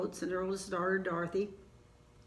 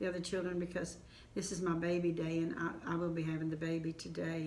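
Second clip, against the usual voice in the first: ordinary delivery, nothing marked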